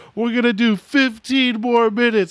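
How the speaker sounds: put-on high yell. Retelling what a man yelled as the water shut off: imitating someone yelling. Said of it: "he yelled".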